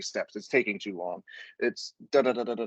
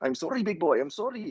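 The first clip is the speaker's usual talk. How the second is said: rough, pitched-up, put-on Brazilian accent; 7 semitones higher than usual. Retelling what the coach said to him, imitating a Brazilian accent. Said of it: "my Brazil my Brazilian accent needs work".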